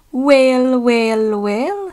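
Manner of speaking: feigned innocence, sweet and mild, musing tone. Narrator voicing Douglas answering James in a story, innocently. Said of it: "said Douglas innocently".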